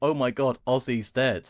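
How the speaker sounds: usual speaking voice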